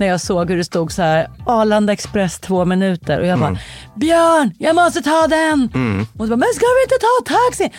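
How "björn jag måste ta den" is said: acted roaring bellow, higher, slower. Recounting rushing to catch the Arlanda Express, retelling a roar. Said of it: "vrålade jag till det".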